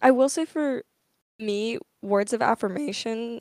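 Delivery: voice breaking partway through a word. Talking to viewers, voice cracking. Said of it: "voice crack, damn, I don't know if you guys heard that".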